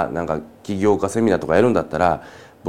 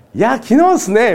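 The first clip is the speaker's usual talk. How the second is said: super cheerful, very high, bouncy upbeat chirp; 6 dB louder than usual. Acting out someone talking about news, in a put-on super happy voice. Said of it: "超ハッピーなね、ウキウキボイスで喋ってるわけですよ。".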